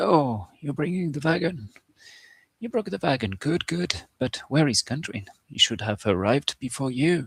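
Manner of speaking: put-on kindly old man voice. Running a game, the narrator voices a kind character greeting the players: old man voice. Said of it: "I'm gonna take an old man uh, voice a bit".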